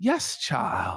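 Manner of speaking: mock affected voice, D dropped in child. Quoting how Patrick talks, imitate his exact affect, saying 'child' without the D. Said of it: "in that exact affect ... He says child, like without the D".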